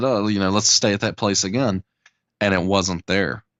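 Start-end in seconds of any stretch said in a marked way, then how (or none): none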